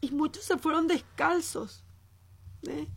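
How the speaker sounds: overcome with emotion. Speaking to listeners about brave soldiers and apologizing to them for it, getting emotional. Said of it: "Me emociono, gente, perdón".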